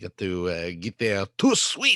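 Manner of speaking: horrible fake French accent. Speaker jokes with two others in a bad French accent. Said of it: "Your French accent is so horrible".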